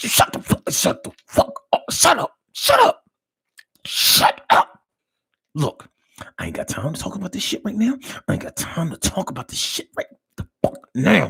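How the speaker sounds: acted, whispered fighting tone. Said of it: "Have you ever been involved in a whisper argument?".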